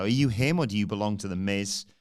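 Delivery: ordinary talk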